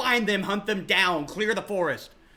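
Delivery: high-pitched, sharp barking delivery. Game master voices a knight ordering the hunt for the fleeing party, barking orders. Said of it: "the Star Knight is like barking orders".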